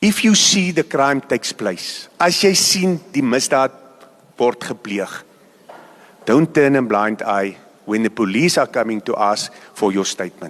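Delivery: very low, slow, measured, drawn-out, deliberate speech. Speaker telling the public to listen very carefully: talking slowly. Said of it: "And I'm going to talk slow".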